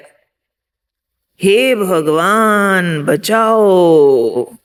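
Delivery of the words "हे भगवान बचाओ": slow, drawn-out, heartfelt crying voice. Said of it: "बहुत दिल से, जोर से उसने चिल्लाया".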